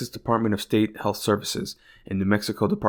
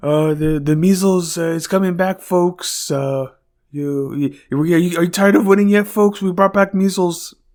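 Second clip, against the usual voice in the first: raised, pitched-up, big, halting rambling delivery; 8 semitones higher, 8 dB louder than usual. Listing people with funny voices: Trump voice. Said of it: "and then Trump".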